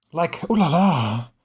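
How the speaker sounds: put-on sultry, aroused-sounding voice. Retelling a scene where a woman reacts to a man ripping off his shirt, imitating a horny ooh la la. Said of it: "She says it kind of like she's sort of horny".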